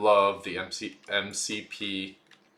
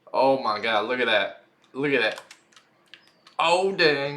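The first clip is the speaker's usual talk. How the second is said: excited and giddy voice; 5 semitones higher, 6 dB louder than usual. Playing a game with a new run speed, excited and giddy. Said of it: "I'm so giddy".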